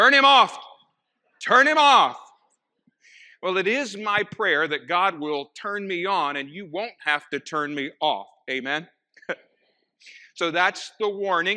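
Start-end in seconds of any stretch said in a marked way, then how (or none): 0.0-2.2 very high, very loud, shrill booming holler. Preacher retelling the same congregation member calling out again, retelling a man hollering. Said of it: "the very same voice hollered out".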